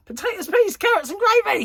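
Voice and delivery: very high, loud cheeky shout. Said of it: "So I shouted back".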